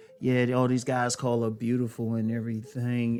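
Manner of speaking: normal talking voice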